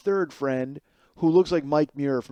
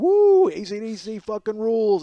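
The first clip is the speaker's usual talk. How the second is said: very slow, loud, stretched-out whooping yell; 8 semitones higher, 5 dB louder than usual. Retelling what a headbanging guy at the show yelled: imitating someone yelling.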